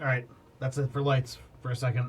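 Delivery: ordinary delivery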